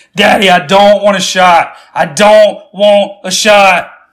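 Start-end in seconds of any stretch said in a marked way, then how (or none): none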